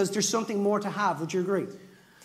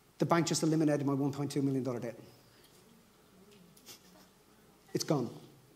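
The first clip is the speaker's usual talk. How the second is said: put-on tearful voice, lower and quieter; 7 semitones lower, 6 dB quieter than usual. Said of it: "she burst into tears".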